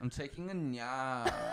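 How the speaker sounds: soft, slow socialite drawl, nap stretched out. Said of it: "Put a little Y in there like [name]".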